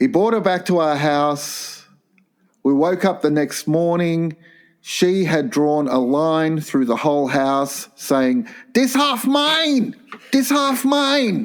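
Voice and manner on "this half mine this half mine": put-on poorly done Thai accent, very high. Reading out a letter, quoting the young woman in a bad Thai accent. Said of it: "Maybe I'm just doing the accent wrong".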